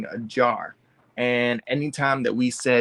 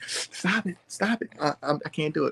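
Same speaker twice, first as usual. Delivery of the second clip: begging, pleading voice on the verge of crying; 5 semitones higher, 5 dB quieter than usual. Retelling having tangled hair detangled: imitating himself about to cry. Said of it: "I was over here about to cry".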